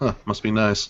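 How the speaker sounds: mumbling under breath. Watching her disappear into the mist, mumbling under breath. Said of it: "kind of mumble under my breath".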